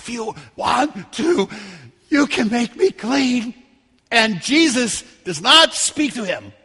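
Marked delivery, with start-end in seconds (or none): 0.0-3.5 put-on slow, rasping, pitiful voice. The speaker acts out a leper's words to Jesus, put-on rasping, pitiful voice. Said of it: "probably with just a rasping, pitiful voice".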